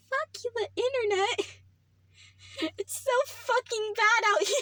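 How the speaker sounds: high-pitched voice. Cursing as the internet drops out again, in a high-pitched voice. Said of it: "I don't like how my voice can go to that pitch".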